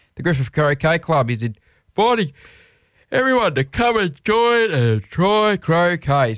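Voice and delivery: words stretched by a yawn. Host plugging a croquet club's invitation to try croquet, yawning while speaking. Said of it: "Sorry for yawning".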